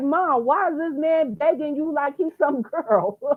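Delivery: put-on mad, indignant little-kid voice. Quoting her five-year-old son's question to her, imitating his anger. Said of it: "He was mad about that shit".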